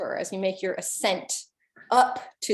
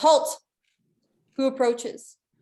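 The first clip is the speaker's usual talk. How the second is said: high, loud yell, calling down from above; 6 semitones higher, 5 dB louder than usual. Voicing a gate guard who challenges the approaching party: guard yelling down. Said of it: "one of the guards yells down".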